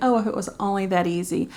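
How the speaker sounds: normal talking voice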